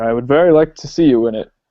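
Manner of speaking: normal talking voice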